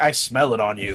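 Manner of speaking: put-on werewolf character voice. Imagining a werewolf game character texting: put-on werewolf character voice. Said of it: "So he's a werewolf, so he'd be like".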